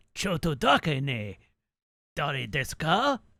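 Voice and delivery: deliberately poor Japanese pronunciation. Retelling an exchange with a police officer, voicing the New York City cop's clumsy Japanese. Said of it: "I was intentionally pronouncing it poorly because it, I am voicing a New York City cop".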